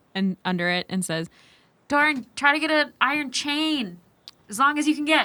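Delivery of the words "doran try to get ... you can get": loud, high-pitched yell, calling out. Voicing a character calling down through a rug hole: yelling through a hole. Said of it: "yells through the rug hole".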